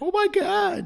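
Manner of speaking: shrill, very high-pitched screaming cry. Describing people on a beach watching a shark attack, mock screaming. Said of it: "they're just standing there screaming".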